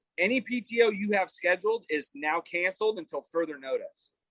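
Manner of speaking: ordinary talk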